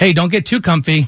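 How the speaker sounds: normal talking voice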